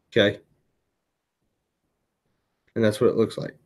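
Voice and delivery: hiccuping while talking. Seller showing an item at one thirty in the morning, with the hiccups. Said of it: "I've got the hiccups".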